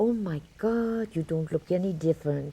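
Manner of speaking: put-on German accent. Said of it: "he had a typical German accent".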